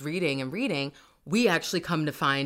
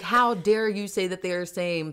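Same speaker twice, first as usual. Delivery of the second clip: mock outraged, furious, indignant outburst; 3 semitones higher than usual. Retelling a book scene where the priestess gets mad: imitating angry Priestess Anaya. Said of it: "she got so mad".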